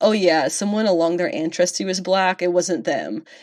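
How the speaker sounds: normal talking voice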